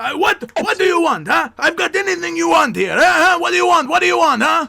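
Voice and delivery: very high-pitched shouting market hawker voice. Playing a fruit seller calling out to a customer, Al, shouting fruit seller. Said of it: "back at the same volume".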